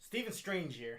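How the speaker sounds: put-on American accent. Joining in the American accent impression: Doctor Strange's American accent. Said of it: "I like this American accent".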